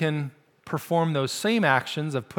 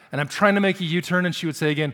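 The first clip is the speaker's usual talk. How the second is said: normal talking voice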